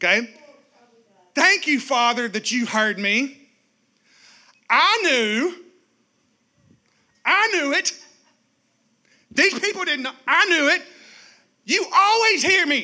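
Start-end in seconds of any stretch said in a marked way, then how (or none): 1.3-12.8 dripping, heavy sarcasm. Acting out Jesus praying at the tomb: sarcastic Jesus voice. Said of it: "get sarcastic Jesus in your mind".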